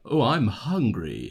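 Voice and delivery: put-on British-accented delivery. Showing how a British person would say it, British accent. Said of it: "picture how a British person would say".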